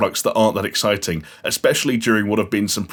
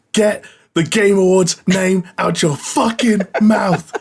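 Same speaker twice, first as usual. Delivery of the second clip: mock very high screaming, words stretched long; 10 semitones higher, 4 dB louder than usual. Imagining a slap on stage, then imitating Jeff Keighley screaming.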